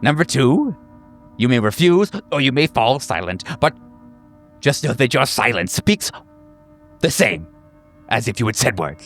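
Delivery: building excitement with swooping pitch. A group leader lays out the session's rules to the group: growing more excited. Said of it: "he opens his mouth to smile in a way that reveals the rows of uh, / I will guide you. / Getting more excited as he says all these things".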